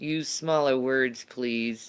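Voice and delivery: ordinary talk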